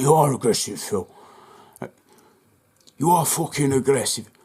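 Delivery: imitated, put-on deep voice. Quoting what the man at the fence said to him, imitating a deep voice. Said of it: "fucking this and fucking that with a deep voice".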